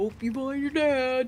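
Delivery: called out loud and high. Imitating the narwhal in Elf saying goodbye: imitating the narwhal in Elf. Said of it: "you sounded like the narwhal that says bye".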